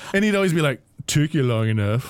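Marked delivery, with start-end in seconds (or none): 1.1-2.1 put-on pompous character voice. Retelling a game cutscene line: pompous Orphan impression. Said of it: "he's so pompous".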